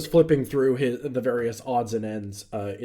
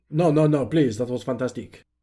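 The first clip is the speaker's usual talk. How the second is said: put-on French accent; 3 dB louder than usual. A player voicing a character declines a further offer of food; french accent. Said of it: "let me see if I can do that in a French accent".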